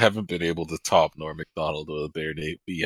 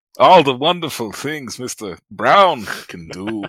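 very loud, high, belted, bad put-on German accent; 7 semitones higher, 9 dB louder than usual. Read Dr. Seuss aloud in a bad Christopher Walken impression sounding German. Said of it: "So fucking German".

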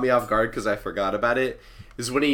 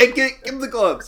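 put-on yelling, higher; 12 semitones higher, 4 dB louder than usual. Retelling a movie scene, imitating John Candy yelling at a dog. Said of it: "yelling at the dog".

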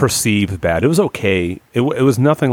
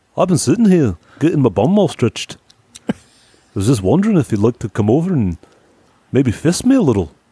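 put-on Scottish accent; 6 semitones higher than usual. Voicing Paige in a crude joke bit, mock Scottish accent. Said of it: "Becoming Scottish".

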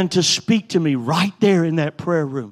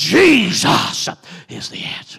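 slightly gravelly evangelist preaching voice. A preacher retells preaching the message again, imitating the evangelist: a little gravel. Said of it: "use a little gravel in my voice like the evangelist did".

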